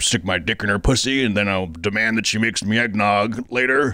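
put-on, overcompensating, cartoonish fake voice. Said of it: "cartoonishly over, um, overcompensating".

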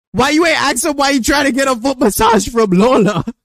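loud shouting.

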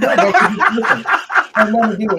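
high, loud laughing objection.

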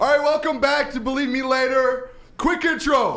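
high loud shouting. Opening the show's episode on NFL draft day: yelling. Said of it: "Stop yelling".

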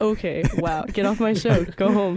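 ordinary talk, nothing marked

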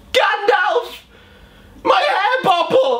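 play-acted very high, shrill, shocked shriek. Telling a story, the speaker acts out a man who turns around in shock, retelling a scream. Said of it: "he screams".

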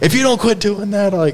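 put-on high yelling. Recounting yelling at a handcuffed man while a tow truck driver watches: retelling a yell. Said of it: "and I'm yelling at him".

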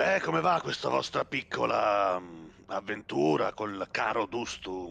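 raspy, rough, creaky put-on character voice. Voicing a character who addresses the group, in a put-on character voice. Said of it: "aspetta che devo fare la voce".

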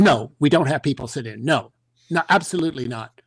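play-acted growling, snarling voice. Retelling a road manager refusing a request: imitating a snarl. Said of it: "kind of snarls at us".

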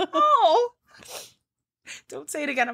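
very high, choked up, swooping, on the verge of tears. Talking with a friend they miss, getting choked up. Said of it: "I'm going to get choked up".

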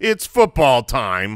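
insincere, sarcastic voice. Showing how to wink with your voice: sarcastic voice. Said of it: "I think that's a sarcastic voice".

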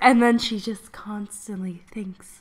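slow, breathy whisper. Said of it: "she speaks like this".

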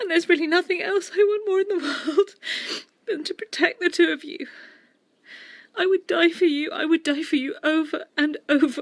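very high, tearful crying voice, speaking through tears. Mother explaining to her child why she said Rob didn't want her, crying. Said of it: "Don't cry, Mum".

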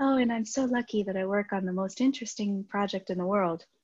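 kindly, very nice, pleasant tone. Retelling meeting John Newberry, quoting him in his very nice voice. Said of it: "in his like very nice voice".

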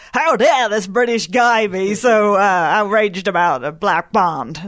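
poorly put-on American accent. Quoting angry American followers, in a bad American accent. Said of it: "That's my worst American accent".

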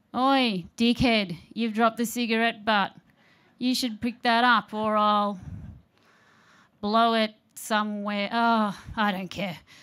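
apathetic, laid-back, unbothered Australian accent. Imagining what a Mother Nature voice might say; relaxed Australian Mother Nature voice. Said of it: "a less Swedish and more of a relaxed Australian Mother Nature voice".

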